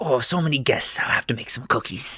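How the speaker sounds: muttering under breath. Voicing Granny Shaw as guests walk to a room: whispering under breath. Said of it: "under her breath whispering".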